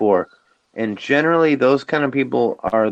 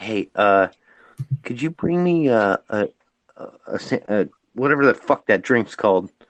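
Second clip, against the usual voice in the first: half-whispered, hushed voice. Speaker retells a man calling her, imitating a phone half-whisper. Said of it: "he's whispering on the phone".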